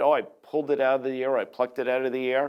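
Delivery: ordinary delivery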